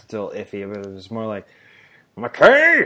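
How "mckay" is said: put-on gruff teacher voice, higher and louder. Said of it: "my Del Close impression".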